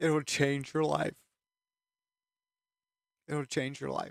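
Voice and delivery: crying, tearful, choking up through the words. Urging the audience to read and pray every day, tearful. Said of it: "I'm a crybaby".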